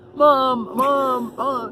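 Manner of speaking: loud, high, obnoxious, whiny, annoying voice.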